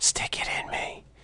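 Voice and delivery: very quiet, barely voiced whisper. Retelling what a woman said in a graveyard: imitating a whisper. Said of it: "Only she said it in a whisper".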